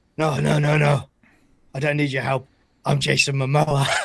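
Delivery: put-on sloshed, hammered, drunk man's voice. Retelling finding someone hammered outside the apartment door: imitating drunk Jason Momoa. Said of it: "he found him hammered outside the apartment door".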